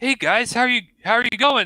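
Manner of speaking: very high-pitched, loud character voice. Voicing Lulu, who flies up to greet the party: Lulu voice. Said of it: "you see Lulu fly up to you guys and like".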